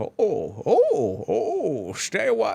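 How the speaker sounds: very slow swooping drawl. Retelling quoting a game voice clip to a friend: Deckard Cain voice. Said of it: "then you just start saying it".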